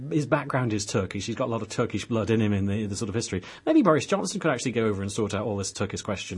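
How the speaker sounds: usual speaking voice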